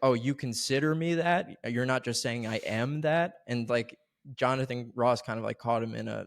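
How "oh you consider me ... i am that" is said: ordinary delivery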